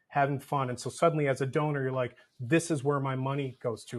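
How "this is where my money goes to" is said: ordinary talk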